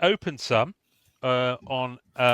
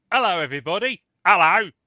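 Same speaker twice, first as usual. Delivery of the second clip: loud, high Cockney accent; 5 semitones higher, 5 dB louder than usual. Podcast host opening the show and greeting everybody, sounding cockney. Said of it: "I sound like some sort of Cockney Sparrow".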